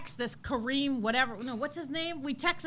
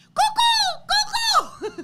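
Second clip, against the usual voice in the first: shrill, very high, loud yelled call; 7 dB louder than usual. Retelling driving around a pond searching for a dog, retelling yelling its name. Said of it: "I'm yelling out the way I say Coco's name".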